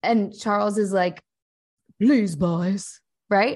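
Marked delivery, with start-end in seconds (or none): 2.0-3.0 wobbly, sad, donkey-like voice. Showing how Charles's voice differs from Harry's, wobbly, sad donkey-like Charles voice. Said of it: "It's got a little bit of like a wobbly".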